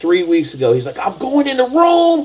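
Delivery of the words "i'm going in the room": acted, very high, amped-up, fired-up scream. Retelling a phone call from a trainee who just graduated: imitating someone screaming. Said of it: "he called me screaming at me".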